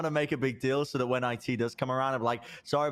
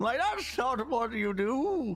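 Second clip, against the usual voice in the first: put-on old fantasy adventurer man voice, much higher; 10 semitones higher than usual. Trying for a country accent, the speaker slips into an old fantasy D&D man voice. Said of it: "I've slipped into old fantasy D and D man".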